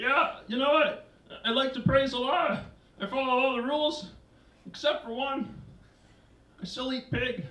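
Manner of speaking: high frog puppet character voice. A stand-up warms up the room with impressions, starting with a Kermit the Frog impression. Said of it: "my impersonation of Kermit the Frog".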